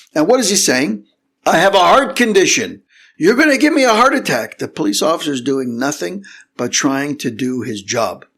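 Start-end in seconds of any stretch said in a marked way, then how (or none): 1.5-4.6 high, frantic, irate, out-of-control screaming. Retelling what a man pulled from his car was saying: imitating a man screaming. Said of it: "The guy is screaming and yelling".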